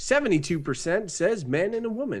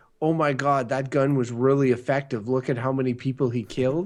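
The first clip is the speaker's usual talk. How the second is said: normal talking voice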